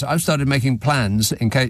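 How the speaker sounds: normal talking voice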